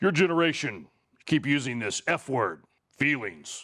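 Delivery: very deep, low bass rumble. Quoting a big fighter pastor speaking to kids: imitating Ken Graves' deep voice. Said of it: "he talks like this".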